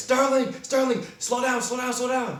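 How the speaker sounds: very high-pitched, loud, frantic, panicked yell. Retelling riding behind a speeding car, imitating his own panicked yelling. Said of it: "I'm yelling".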